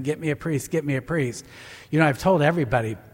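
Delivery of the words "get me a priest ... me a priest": plain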